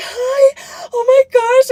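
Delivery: giddy, starstruck gushing, very high and drawn out. Retelling greeting a celebrity while pretending to be fans: imitating acting giddy. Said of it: "I act all giddy".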